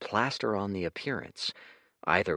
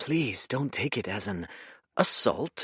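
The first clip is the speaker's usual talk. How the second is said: soft, soft-spoken delivery. Asked whether he was the attacker in the first trial, the man answers softly. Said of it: "He searched the man's gaze for deceit, / boy, whatever, / said [name] softly. / said [name] with a little hoarse laugh".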